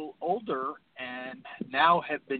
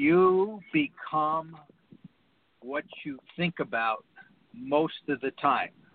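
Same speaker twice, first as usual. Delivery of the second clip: slow, deliberate, halting, broken word-by-word delivery. Leaving the listener with a phrase he calls important, said slowly. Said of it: "I'm going to say it slowly".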